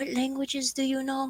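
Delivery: quiet, confidential tone. A character at the front counter asks the man there, in a lowered voice. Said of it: "she kind of like lowers her vo- voice".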